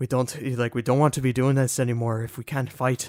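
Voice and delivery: imitated Irish accent. Speaker quotes the king from Xenoblade 2 to friends, in an Irish accent. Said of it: "has just like the best Irish accent".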